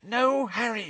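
petrified gasping whisper. Narrator reads a character's line while restraining someone, petrified gasping whisper. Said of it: "gasped in a petrified whisper".

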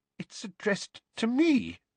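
trembling, very high, wavering, shaking voice. Narrating a story, reading the aunt's reply in a shaking voice. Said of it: "said Aunt Petunia in a shaking voice".

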